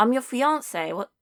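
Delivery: attempted put-on Welsh accent. Told to redo a line from the scene, the speaker repeats it; attempted Welsh accent. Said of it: "You have to do that in a Welsh accent".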